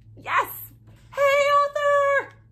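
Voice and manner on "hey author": high, loud scream. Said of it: "Louder. Say it again".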